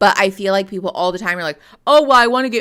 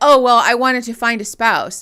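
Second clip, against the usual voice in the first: mocking imitation in a higher voice; 3 semitones higher, 3 dB louder than usual. Mocking how contestants answer why they joined: mocking imitation of a contestant. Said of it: "And someone's like".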